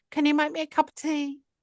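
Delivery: tiny, high, small, demanding little voice. Retelling a request heard from the dark at bedtime: imitating Claire's tiny demanding voice. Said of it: "I hear a tiny, demanding voice".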